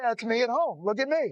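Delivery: ordinary delivery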